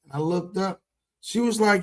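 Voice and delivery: ordinary talk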